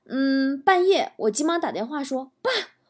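ordinary talk

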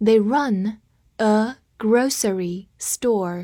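slow, drawn-out reading pace.

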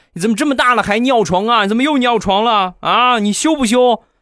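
very high, shrill, loud, reproachful scolding shout. Retelling a mother shouting at a child for wetting the bed: imitating a loud scolding shout. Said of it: "冲着我小侄子大声地喊道".

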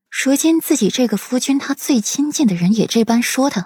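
plain reading voice

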